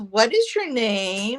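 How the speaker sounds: little voice. Retelling a woman's questions to anyone present, in a little voice. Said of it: "got this little voice".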